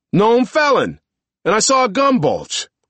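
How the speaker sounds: high, loud swooping shout. Malone yells for the benefit of passers-by who glance over: yelling. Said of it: "he yells".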